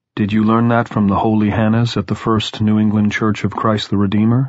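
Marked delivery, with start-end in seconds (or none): none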